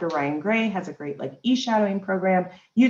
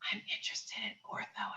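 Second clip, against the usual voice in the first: hushed, breathy, very quiet whisper; 18 dB quieter than usual. Retelling how students in the office would whisper their interest, imitating a whisper. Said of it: "students in my office that would whisper".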